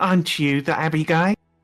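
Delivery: put-on, fake, confrontational anger. Retelling an encounter, the speaker repeats what he said to two men in mock anger. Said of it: "in fake anger and go".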